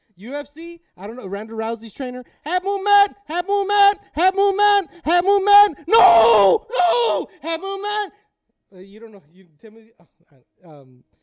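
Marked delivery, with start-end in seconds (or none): 2.4-8.2 put-on yell, higher and louder. Retelling a fight trainer's corner advice: imitating a trainer yelling. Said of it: "he's just yelling".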